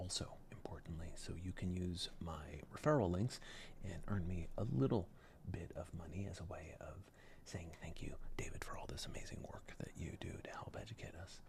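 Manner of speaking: hushed, very soft whisper. A video host mentions referral links below the video, whispering. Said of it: "I don't know why I'm whispering".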